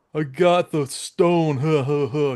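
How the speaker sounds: slow, put-on tough-guy cartoon thug voice. Retelling how a cartoon villain talks: imitating a thug voice. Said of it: "he's doing the thug voices like".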